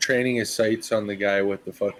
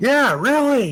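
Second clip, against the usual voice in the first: high, loud, slow yell. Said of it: "Atticus yells back".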